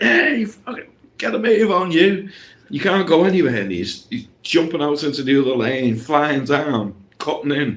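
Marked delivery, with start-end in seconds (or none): 0.0-3.5 mock, high-pitched, screaming, raging yell. Retelling a driver in bumper-to-bumper traffic, imitating a driver screaming. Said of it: "Screaming at each other".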